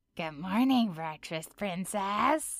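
oily, sleazy, oozing slimy cartoon-villain voice. Asked for a character impression, the speaker does a slimy Ice King voice. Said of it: "this is Ice King".

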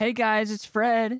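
very high-pitched voice, pushed way up. Recalling a YouTube video with friends: high-pitched Fred voice. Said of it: "with the high-pitched voice".

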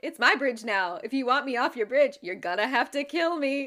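acted-out taunting tone. Recounting a co-host taunting the goat man on a bridge: mock-taunting. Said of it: "he taunts it with".

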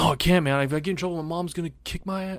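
mock pleading, child's voice. Retelling a school story, the speaker voices a classmate afraid of trouble, imitating a pleading kid. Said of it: "He's like".

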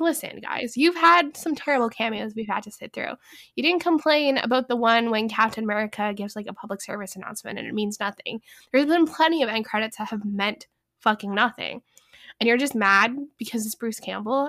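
ordinary talk, nothing marked

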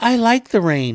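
mocking, innocent-sounding voice.

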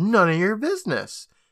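high yelled reply. Retelling a scene, the speaker acts out a character's answer to his question: retelling a yell. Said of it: "And Megan yells".

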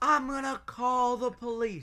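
play-acted, heated, high-pitched half-shout. Retelling a scene at a McDonald's, quoting a threat to call police: retelling a yell. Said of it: "He's yelling".

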